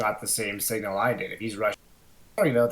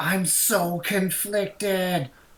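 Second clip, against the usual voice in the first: loud, high yelling; 9 semitones higher than usual. Playing a character calling out while teammates shout inside: yelling out. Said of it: "I'm gonna yell out".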